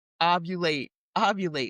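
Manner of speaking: plain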